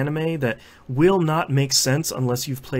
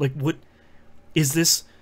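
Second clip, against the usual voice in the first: ordinary talk, nothing marked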